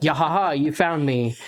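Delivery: smug, gloating wolf voice. Acting out the wolf in a planned fight scene: gloating wolf. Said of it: "he's basically kinda gloating a little bit".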